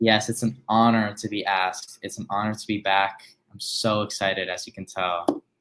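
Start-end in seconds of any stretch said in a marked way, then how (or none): 3.5-4.5 deadpan, flat, fake excitement. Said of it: "I hear the excitement in your voice".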